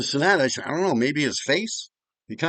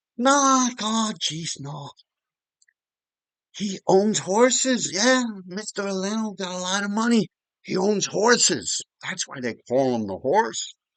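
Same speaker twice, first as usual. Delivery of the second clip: thick Irish brogue, laid on, high and slow; 6 semitones higher than usual. Acting out what your mother said about a man, use your mother's very thick irish accent. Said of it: "my mother talked with a very deep Irish accent".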